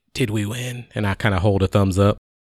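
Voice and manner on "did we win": hushed, soft, gentle, quiet voice. Voicing a character stirring awake after a fight, asking: quietly. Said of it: "and I just as quietly say".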